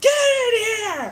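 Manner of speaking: very high, loud holler. Retelling how the sister hollered across the house: imitating a deep holler. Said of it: "deep holler across the house".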